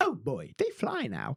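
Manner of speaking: unhurried, slow, drawn-out film-character delivery. Quoting a movie scene where characters marvel: Rise of Skywalker character impression.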